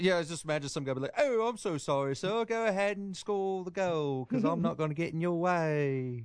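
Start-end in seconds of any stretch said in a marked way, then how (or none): 1.2-6.2 put-on British accent, much higher pitch, slower pace. Speaker imagines a man apologizing to a royal during a game, Prince Harry accent. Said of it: "Prince Great Harry accent there".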